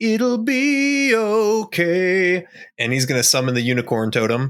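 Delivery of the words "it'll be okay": swelling crescendo rising to a very high pitch. Speaking in character while widening stance for spellcasting: voice rising in a crescendo. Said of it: "kind of in a crescendo of his voice".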